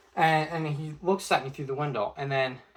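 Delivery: normal talking voice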